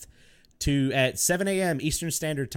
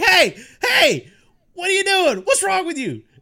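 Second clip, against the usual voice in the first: very high, loud, bouncy, swooping comic outburst; 7 dB louder than usual. Retelling a funny animation video, imitating Hannibal Buress. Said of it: "he's Hannibal Buress and he's like".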